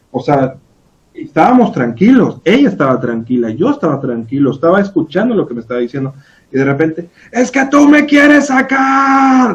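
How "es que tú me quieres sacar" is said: play-acted very high, drawn-out cry, stretching "sacar". Retelling how a patient suddenly started yelling during therapy: imitating a woman yelling. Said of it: "de repente que me empieza a gritar".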